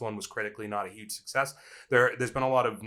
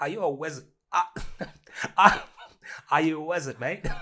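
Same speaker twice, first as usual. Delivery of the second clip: loud, rough, bad put-on British accent; 6 semitones higher, 5 dB louder than usual. Asking Matt a big question, in a put-on British accent. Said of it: "Is that your British accent?".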